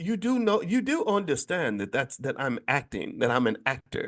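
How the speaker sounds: bad, mock British bloke accent.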